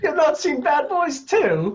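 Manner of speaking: loud, very high, put-on British accent. Reacting to another speaker's question, in a mock British accent. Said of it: "You're banned from doing British impressions".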